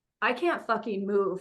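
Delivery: ordinary talk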